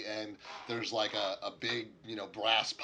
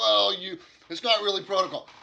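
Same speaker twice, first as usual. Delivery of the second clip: apologetic orc voice, much higher and louder; 10 semitones higher, 11 dB louder than usual. In a game scene, an orc answers a request from a visitor, apologetic. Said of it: "the orc begins to start like an apologetic".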